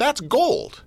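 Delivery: very high-pitched voice. Praising a catchphrase mid-conversation, voice going really high. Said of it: "my voice went really high".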